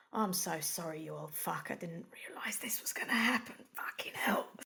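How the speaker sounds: hushed, soft whisper. Voicing Stacey just after she blocks a bite with her axe handle, whispering. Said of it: "she just sort of whispers".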